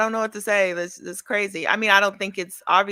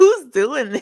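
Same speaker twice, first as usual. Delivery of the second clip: can't stop laughing, higher and louder; 4 semitones higher, 5 dB louder than usual. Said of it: "I can't stop laughing".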